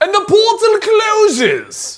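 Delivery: fake British accent, pitched very high. Reading an ad, the host slips into a bad British accent. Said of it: "Why did I get an accent with that?".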